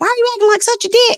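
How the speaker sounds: put-on very high, loud, angry Southern accent. Quoting a southern girl cussing at him mid-fight, in a southern accent. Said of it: "real bad in her Southern accent".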